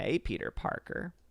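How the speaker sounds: whispery, breathy, half-whispered put-on voice. Saying hello to Peter Parker, done in a Brie Larson voice. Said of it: "I never want to do that voice again. That's my Brie Larson".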